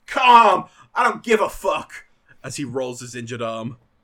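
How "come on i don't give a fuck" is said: shrill, very high, all-out loud yell. Describing a wrestling match, quoting a wrestler: imitating a wrestler yelling.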